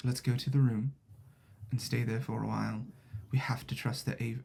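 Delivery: put-on whisper. Voicing a character whispering in a player's ear: whispering in character. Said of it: "she whispers in your ear and says".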